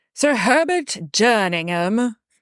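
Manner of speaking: poor put-on British accent. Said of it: "I can only say this with a really bad British accent".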